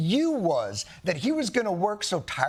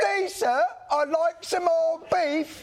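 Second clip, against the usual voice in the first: fake English accent, high and slow; 8 semitones higher than usual. Describing a sketch where John Oliver begs the president, John Oliver fake English accent. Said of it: "(ENGLISH ACCENT)".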